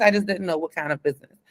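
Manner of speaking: normal talking voice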